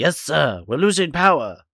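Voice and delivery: rough, rasping movie-style voice. Describing how a voice in a movie changes, quoting it: raspy movie voice. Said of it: "it's like just like this raspy".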